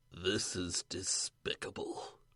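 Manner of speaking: whispered, hushed video game character voice. Speaker imitates a character from a game they played, video game character impression. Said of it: "Guy from Vampire Voice".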